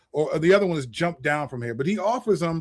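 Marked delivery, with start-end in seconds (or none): none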